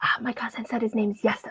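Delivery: hushed, quiet whispered aside. Telling a story, the speaker voices a kid answering a stranger, retelling a whisper. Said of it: "and he's gonna whisper".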